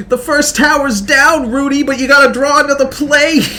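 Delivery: very high, loud, squealing, dopey cartoon voice. Demonstrating a bit they like to do, in Snap's stupid voice. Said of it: "where you just do Snap's stupid voice".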